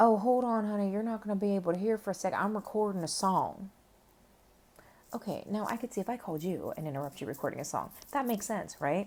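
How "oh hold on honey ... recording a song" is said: put-on southern American accent. Retelling what a caller said on the phone, imitating a southern accent. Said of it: "he has this like southern accent".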